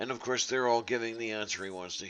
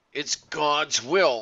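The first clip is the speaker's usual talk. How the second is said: loud, raised-voice yell; 4 semitones higher, 8 dB louder than usual. Retelling how the instructor raised his voice: imitating someone yelling. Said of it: "he raised his voice, uh, yelling it".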